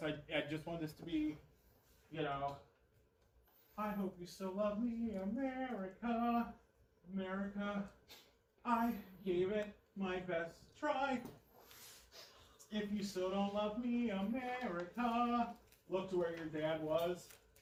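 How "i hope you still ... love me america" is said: slow, high voice holding back tears, staying strong. Showing an actor how to deliver the line: holding back tears. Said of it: "trying to be strong, trying not to cry".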